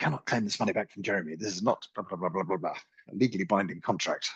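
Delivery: rapid, very fast, rattled-off small-print advert voiceover. Speaker mimicking the rushed disclaimer at the end of adverts, fast advert disclaimer voice. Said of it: "someone talking very quickly at the end".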